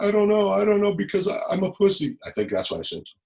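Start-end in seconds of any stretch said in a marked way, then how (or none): 0.0-2.2 acted-out sobbing, very high-pitched crying voice. Retelling being asked why your mom did that to you, imitating your own past crying. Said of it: "I was just crying like".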